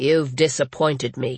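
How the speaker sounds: flat, toneless. Canote speaks to Patricia lying on a bench, in a flat voice. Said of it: "Canote said in a flat voice".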